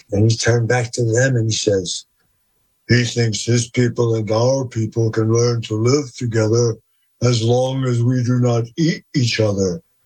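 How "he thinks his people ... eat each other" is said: put-on voice of a creature leader. Retelling what the leader of the beings said: imitating the creature's voice. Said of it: "I'm gonna imitate the voice".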